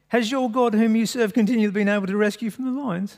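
terrible fake English accent. Reading the story of Daniel, the speaker voices the king in a terrible English accent. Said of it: "that terrible accent".

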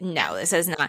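low, soft, firm, authoritative parent voice.

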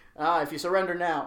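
usual speaking voice

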